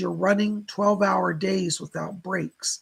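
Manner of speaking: plain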